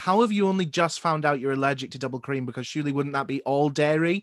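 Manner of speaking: usual speaking voice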